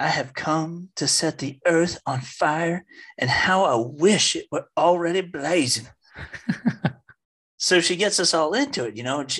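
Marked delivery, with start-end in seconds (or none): 0.0-5.9 slow preacher's Southern drawl. Retelling a sister reading from the gospel, the speaker uses a Southern accent. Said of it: "she had this awesome Southern accent".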